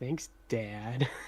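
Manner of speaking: muttered under the breath. In a scene, Red answers the one who just called her Red, muttered under her breath. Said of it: "She's gonna say, kind of under her breath".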